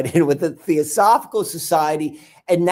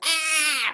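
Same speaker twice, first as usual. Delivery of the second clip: high, overwhelmed yelp of ah. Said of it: "my head's like".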